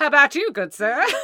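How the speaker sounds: fairground barker call. Selling plushes, a co-host pictures her as a carnival barker: carnival barker voice. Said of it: "the carnival barker".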